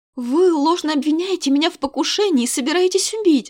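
put-on indignant, high-pitched exclamation with Russian accent. A woman answers the king who accuses her: indignant exclamation. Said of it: "воскликнула негодующе".

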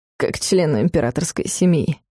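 wry, said with a smirk. Narrator reads a character adding a remark: with a smirk. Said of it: "усмехнувшись".

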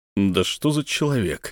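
ordinary delivery, nothing marked

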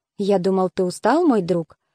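plain

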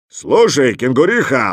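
big, roaring bear voice. Reading a story: the bear calls out to the kangaroo, roaring bear. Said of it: "проревел медведь".

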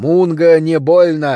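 loud, rumbling, growling monster voice. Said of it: "прорычал я".

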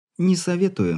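amused little snort. Lena teases the young man who just winked at her, with a smirk. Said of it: "вновь хмыкнула она".

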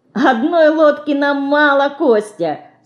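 laughing, teasing tone. Answering a joke about coming to the rescue in a boat, laughing. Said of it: "смеется мышка".

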